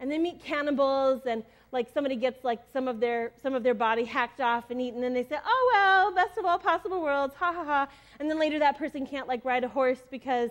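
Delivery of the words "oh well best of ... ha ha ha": mock really cheery, sunny voice, pitched up. Retelling a story's characters shrugging off a disaster: imitating a cheery tone. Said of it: "in a really cheery tone".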